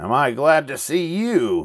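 high, slow, drawn-out cackling creature voice. Reading a story aloud, voicing a small creature greeting the newcomer, cackling. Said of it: "she cackled".

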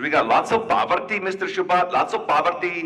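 put-on Indian English accent, excited and eager. Retelling a man's answer to his question, in an Indian accent. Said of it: "You know that Indian accent?".

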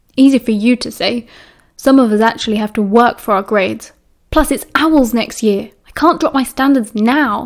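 ordinary delivery

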